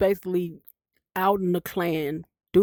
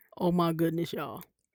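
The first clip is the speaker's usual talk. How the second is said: plain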